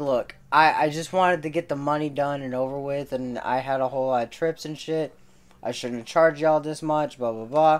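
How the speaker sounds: ordinary delivery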